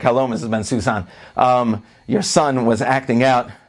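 plain

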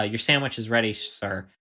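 softly spoken, completely composed, very calm voice. Retelling someone announcing a sandwich order: imitating a calm quiet voice. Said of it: "said very calmly, uh, and quietly".

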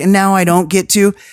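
put-on weeping, teary crying voice. Retelling what a crying person said: imitating someone crying. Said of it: "she's, like, crying".

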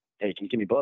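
put-on whisper, spoken as an aside. Retelling how a wrestler broke character to ask a favor: imitating a whisper. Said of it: "whispers in my ear".

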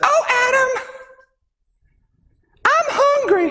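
slow voice, pitched very high. Imagining Eve looking up at Adam and speaking: Eve voice. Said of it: "perfect impression of Eve".

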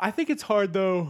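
loud, high talking with words stretched by yawn. Discussing a guard's poor ranking, talking while yawning. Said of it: "Sorry, I'm yawning".

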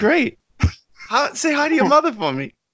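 flighty high-pitched impression. Describing Mark Wahlberg without his Boston accent: flighty high-pitched Mark Wahlberg voice. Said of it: "he gets this kind of flighty, kind of high-pitched thing".

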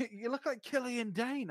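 bad put-on Scottish accent. Retelling what someone in Glasgow shouted: imitating a Scottish accent. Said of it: "Your impression of a Scottish accent is fucking shit".

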